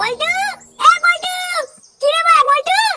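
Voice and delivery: shouting. Calling out to someone by name in a scene, shouting. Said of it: "তুই এত চিল্লাচ্ছিস কেন?".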